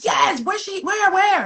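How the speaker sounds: frantic, desperate, high-pitched screaming. Retelling searching for her baby in a parking garage, retelling her screaming. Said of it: "I'm screaming".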